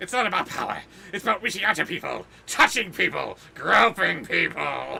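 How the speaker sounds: rough, creaky, croaking raspy voice. Campaigning for mayor: Oswald Cobblepot voice. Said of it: "sounds like Oswald Cobblepot running for mayor".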